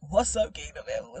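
play-acted angry, cross-sounding, stern tone. Replaying her own greeting to the Kingdom family: imitating her own angry greeting. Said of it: "Why do I sound so angry?".

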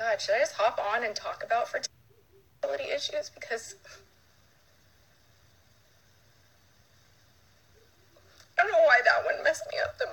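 loud, tearful outburst, crying through the words. Speaker addresses followers on Snapchat, crying. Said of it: "I'm crying on Snapchat".

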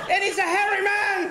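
high, frantic, panicked shouting cry.

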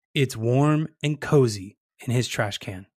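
ordinary talk

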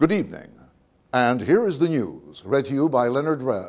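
formal, on-air broadcasting voice. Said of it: "in that broadcasting voice".

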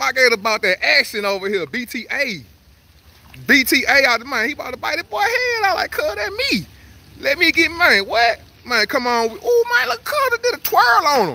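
excited, pumped-up yelling.

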